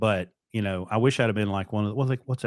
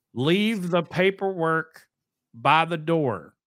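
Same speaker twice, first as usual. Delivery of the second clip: put-on high, slow, carrying yell; 7 semitones higher than usual. Speaker retells a man calling to them from across the lot, retelling a yell across the lot. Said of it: "he yells at me from across the lot".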